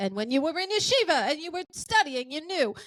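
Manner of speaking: put-on high old man's Eastern European accent.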